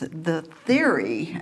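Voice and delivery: "theory" stressed and drawn out.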